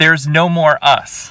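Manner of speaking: toned-down, lightly echoed outburst. Quoting what she said to the speaker two days ago, retelling a very loud remark. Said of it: "in a very loud voice".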